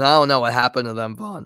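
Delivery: voice cracking. Talking with a co-host, voice cracking. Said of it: "that was a bad voice crap, voice crack".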